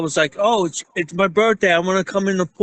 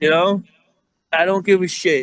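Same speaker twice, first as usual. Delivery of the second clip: usual speaking voice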